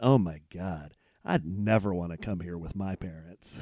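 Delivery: put-on low, muttered sarcasm in a teenage-sounding voice. Retelling what a teenager behind them in line said: imitating a sarcastic remark. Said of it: "I heard one of them say real sarcastically".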